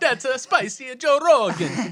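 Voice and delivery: put-on Chinese accent. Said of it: "That was a horrible Chinese accent".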